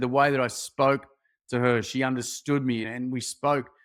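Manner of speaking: normal talking voice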